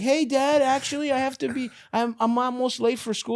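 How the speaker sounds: very high put-on little-child voice. Acting out a kid telling a distracted parent: acted kid voice. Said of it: "your kid is like".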